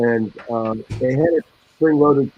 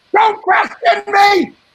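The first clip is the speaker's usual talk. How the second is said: very high, loud, furious screaming rage; 5 dB louder than usual. Recalling a raging game splicer named Grossman: Grossman in a put-on screaming rage. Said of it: "Everything he said was in this screaming rage".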